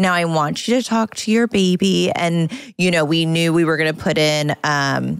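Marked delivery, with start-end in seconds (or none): 0.0-2.1 put-on very sweet voice, higher pitch. Retelling what a teacher said during gentle movement: imitating a very sweet voice. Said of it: "she had the sweetest voice and she would be like".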